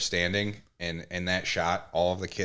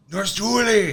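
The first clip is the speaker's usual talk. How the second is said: mock scream, higher and louder; 10 dB louder than usual. Acting out a movie character's scream at a nurse: imitating someone screaming. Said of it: "He's screaming".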